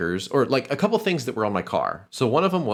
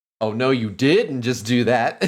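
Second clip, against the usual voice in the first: put-on sassy middle-school girl voice and attitude; 4 dB louder than usual. Doing an impression of girls from middle school, imitating sassy middle-school girls. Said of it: "That's my impression of uh, girls in middle school".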